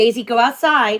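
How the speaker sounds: high, loud yelling. Asking the others to let the gagging dog outside, yelling. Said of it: "Sorry for yelling".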